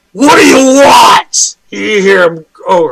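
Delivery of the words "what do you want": booming, resounding, drawn-out ogre voice. Game master voicing a character speaking Ogrish to the players, in a booming voice. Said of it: "just his booming voice".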